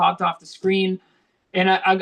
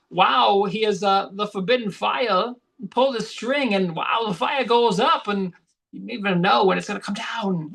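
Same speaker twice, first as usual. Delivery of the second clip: put-on odd, halting voice; 2 semitones higher than usual. Retelling a movie scene like Rob Schneider doing Christopher Walken. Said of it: "Rob Schneider doing, like, a Christopher Walken impression".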